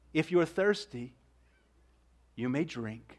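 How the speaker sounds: heavy, wild, deep, strong golden voice. Narrator reads the unseen lion calling to a thirsty girl, heavy, golden voice. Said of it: "a sort of heavy, golden voice".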